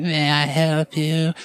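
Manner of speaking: very slow, high, squeaky, drawn-out little gnome voice. Narrator voicing a hunched gnome worker asking someone: squeaky gnome voice. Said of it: "the squeaky voice of somebody saying".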